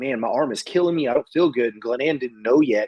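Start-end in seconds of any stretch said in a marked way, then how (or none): none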